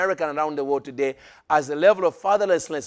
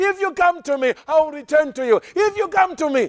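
very high, begging, imploring voice; 11 semitones higher, 3 dB louder than usual. Acting out the father in the story: acting out a pleading father. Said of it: "that's a pleading father".

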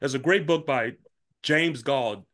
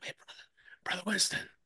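whispered, breathy and hushed; 6 semitones higher, 9 dB quieter than usual. Retelling someone leaning in behind during a church service: imitating a whisper. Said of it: "you hear this whisper behind your head".

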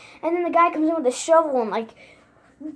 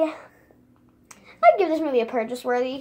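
breaking voice, cracking mid-line. Reviewing a christmas movie, speaker gives a rating: voice cracking. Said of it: "My voice cracked".

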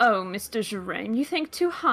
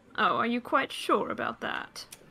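knowing, needling, smug, self-satisfied tone; 2 semitones higher, 3 dB quieter than usual. Voicing Honeymoon doubting the refusal, raising an eyebrow: smug. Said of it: "still smiling smugly".

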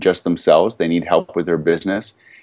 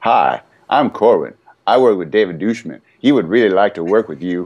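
put-on, terrible, fake Southern accent. Acting out a call pitching a client that he never makes, in a bad southern accent. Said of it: "That's my southern accent".

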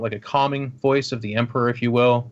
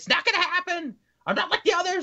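screechy yelling voice, higher; 4 dB quieter than usual. Voicing a cornered man refusing capture: Dan's screechy gaming yell voice. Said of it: "almost like Dan's gaming screechy yell voice".

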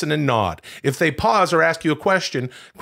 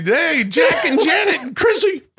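voice pitched way up; 13 semitones higher, 4 dB louder than usual. Showing another speaker a Don Knotts impression. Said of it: "that's my Don Knotts".

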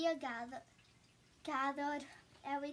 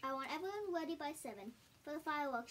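ordinary delivery

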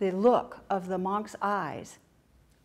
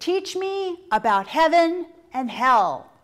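very loud, booming, slow, drawn-out barked delivery; 8 semitones higher, 10 dB louder than usual. Retelling a parable, voicing a samurai demanding of a monk: retelling a barked order. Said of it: "He's barking this out".

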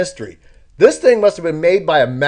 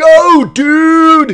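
put-on shrill, very high, very loud kid's holler; 11 semitones higher, 8 dB louder than usual. Recalling a kid behind them on a slide platform, imitating a kid yelling. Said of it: "he just yells".

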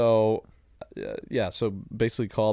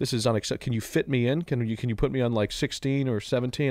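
normal talking voice

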